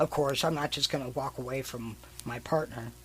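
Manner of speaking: ordinary talk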